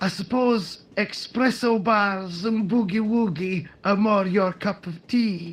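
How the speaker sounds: poor, fake, put-on Scottish accent. Answering someone who urges a visit to the castle, in a bad Scottish accent. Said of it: "Can't get over that accent".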